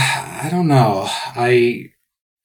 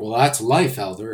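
usual speaking voice

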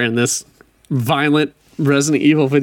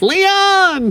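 put-on cry, far too high, drawn out. Imitating the president's daughter calling for Leon: too-high imitation of the president's daughter. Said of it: "No, that was too high".

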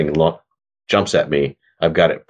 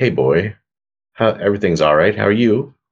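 gentle, calming, soothing, reassuring voice; 3 semitones higher than usual. A player talks to a creature to see if it responds, in a soothing voice. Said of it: "talking to it in a soothing voice".

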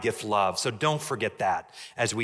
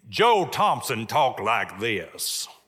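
put-on slow, thick Southern accent drawl. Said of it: "Thick Southern accent".

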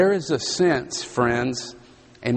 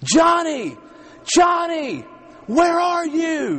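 put-on frantic scream, very high and swooping; 4 dB louder than usual. Retelling a young mother searching for her lost child: imitating her loud scream. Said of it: "screaming at the top of her lungs".

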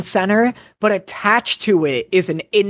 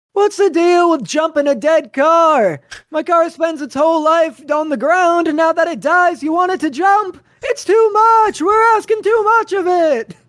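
very high-pitched observational comic voice; 10 semitones higher than usual. Doing a prepared stand-up bit for another speaker: Jerry Seinfeld impression. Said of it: "a Jerry Seinfeld bit".

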